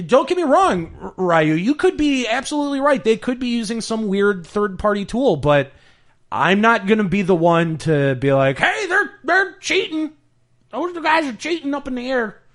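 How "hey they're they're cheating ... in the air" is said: put-on old hillbilly voice, pitched very high. Chatting with friends about players who might be cheating, old hillbilly redneck voice. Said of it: "That's like old hillbilly redneck".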